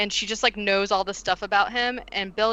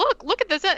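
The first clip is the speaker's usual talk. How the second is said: mock thrilled, excited gushing, pitched way up; 11 semitones higher than usual. Retelling a movie scene, acting out the sister's line: imitating an excited character. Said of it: "so excited".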